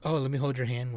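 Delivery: mocking, annoying, dopey and sappy put-on voice. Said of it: "in a fucking annoying, dumb".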